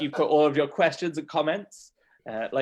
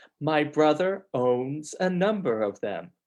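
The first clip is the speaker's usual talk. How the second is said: put-on American accent. Accent coach demonstrating the lost lip rounding, in an American accent. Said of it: "doing an American accent".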